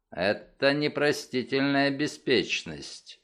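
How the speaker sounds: plain reading voice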